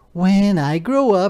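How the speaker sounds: proud, loud and drawn-out delivery. In a children's story, a caterpillar speaks to the frog, proudly. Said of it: "he said proudly to the frog".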